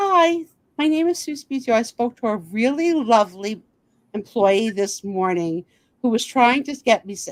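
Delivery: fawning, sucking-up tone. Retelling a phone call to an office, imitating own brown-nosing tone. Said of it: "the brown nosing turned up".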